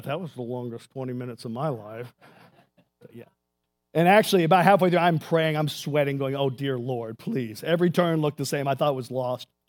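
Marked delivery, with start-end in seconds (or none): 0.0-2.1 mimicked murmur under breath, lower and quieter. Retelling what one guy said on reaching the waterfall, imitating a murmur under breath. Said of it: "I heard one guy murmur under his breath".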